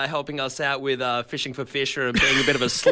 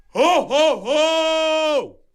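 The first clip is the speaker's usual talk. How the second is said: very high-pitched, drawn-out laugh, each ho stretched; 14 semitones higher, 4 dB louder than usual. Answering a dare to do a Santa Claus impression: Santa Claus voice. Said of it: "Santa Claus".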